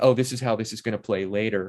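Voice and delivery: normal talking voice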